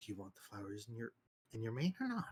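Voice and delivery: whispering. A player's character speaks close into another's ear, whispering. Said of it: "whisper in his ear very closely".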